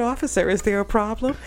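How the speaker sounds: prim, buttoned-up, very proper, polite voice. Retelling a roadside stop, he asks the officer a question, imitating his own very proper polite voice. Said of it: "I think I was whiter".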